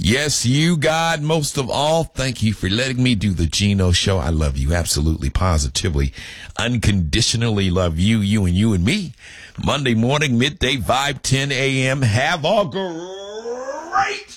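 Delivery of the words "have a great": great said very high and drawn out. Signing off the Chino Show for listeners, in a Tony the Tiger voice. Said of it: "In my Tony the Tiger voice".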